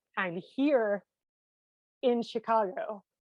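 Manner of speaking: slightly choked up, very drawn out. Telling a story about someone who supported them, the speaker: a little choked up. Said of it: "getting a little choked up now".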